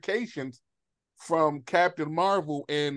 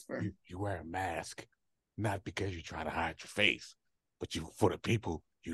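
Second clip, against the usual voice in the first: put-on gravelly movie whisper, lower and quieter; 10 semitones lower, 9 dB quieter than usual.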